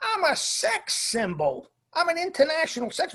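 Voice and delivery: loud, high-pitched yelling. Telling a story where a man yelled at a woman, retelling his yell. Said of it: "he was kind of like yelling at her".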